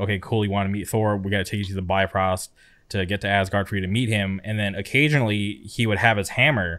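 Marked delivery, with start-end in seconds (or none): none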